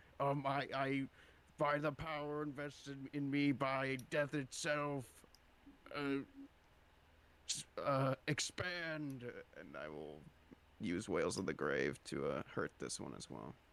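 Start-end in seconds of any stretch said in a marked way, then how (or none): 0.2-9.3 high, grand intoning incantation voice. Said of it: "Sam will say".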